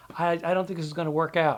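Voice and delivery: ordinary talk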